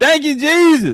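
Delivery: high, acted-out screaming. Retelling catching the Holy Ghost in church: retelling his own scream. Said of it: "I started screaming".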